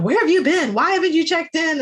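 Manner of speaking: high-pitched yelling in a father's voice. Retelling how he comes and yells at her: imitating someone yelling. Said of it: "when he comes and yells at her".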